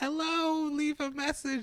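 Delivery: put-on very high, slow, drawn-out old lady voice. Retelling a call to the grandmother's friend, the speaker does the voicemail greeting; old lady voice. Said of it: "old lady".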